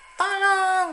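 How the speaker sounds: very loud shout. Teacher tells children not to shout when asking for help: shouting tolong. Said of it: "tidak perlu dengan berteriak ya, ... tidak begitu ya".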